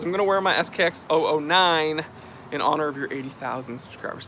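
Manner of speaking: ordinary delivery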